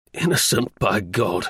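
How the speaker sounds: ordinary delivery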